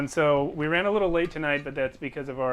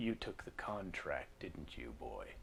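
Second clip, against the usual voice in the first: hushed voice dropped to a whisper; 12 semitones lower, 20 dB quieter than usual. Voicing a character who stops a player at the door: Noonan's changed voice. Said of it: "he speaks to you in a different voice than the one he used earlier".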